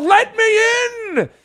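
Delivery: very high, drawn-out wolf growl. Retelling how a man pounded on the front door, retelling a growl. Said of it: "and he growled".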